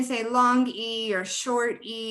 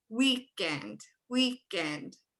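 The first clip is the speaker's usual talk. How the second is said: first syllable week in weekend punched; 5 dB quieter than usual. Showing teachers how to say a word while putting a hand out: stress on WEEK in weekend. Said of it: "you kinda automatically stress that syllable".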